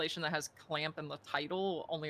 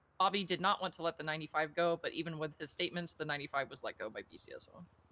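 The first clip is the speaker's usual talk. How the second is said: ordinary talk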